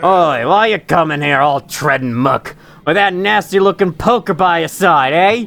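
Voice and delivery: poor put-on Australian accent. One of two fellows at home questions a newcomer: bad Australian accent. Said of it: "my Australian accents aren't very good".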